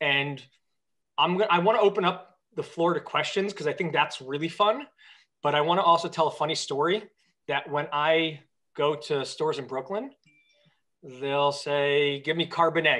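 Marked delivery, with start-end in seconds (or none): 12.2-13.0 put-on thick Yiddish accent. Retelling what people at Brooklyn stores say to the speaker, in thick Yiddish accent. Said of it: "with their thick Yiddish accent".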